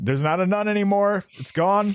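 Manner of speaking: strange announcing tone. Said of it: "I was like".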